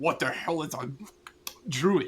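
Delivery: muffled, garbled talk through a mouthful of food. Voicing a character eating a stag: put-on mouth full of meat. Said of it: "my mouth full of meat".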